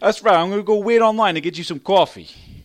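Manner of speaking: put-on New York accent.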